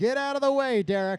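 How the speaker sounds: high, yelled screaming. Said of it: "I'm screaming".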